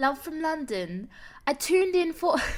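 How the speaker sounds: put-on British accent. Put on the spot to read a line, in a British accent. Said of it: "read this in a British accent".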